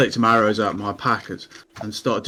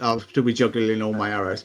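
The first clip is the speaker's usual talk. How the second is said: normal talking voice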